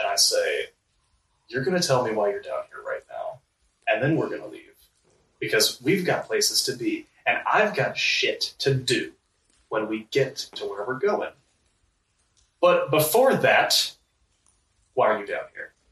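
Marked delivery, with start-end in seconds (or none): 1.5-15.6 severe, stern, firm, no-nonsense insistent tone. A player's character grabs a man and demands to know why he's here; stern. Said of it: "I very sternly grab him".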